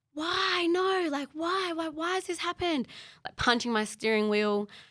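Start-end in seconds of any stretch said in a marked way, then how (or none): 0.2-2.9 very high, hysterical shrieking, acted out. Retelling driving alone after the news: imitating her own hysterical screaming. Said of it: "I was screaming in the car by myself".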